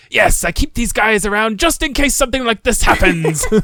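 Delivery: loud put-on pirate accent. Retelling a funny scene from a series, the character snapping into a pirate accent. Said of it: "he like snaps into the pirate's accent".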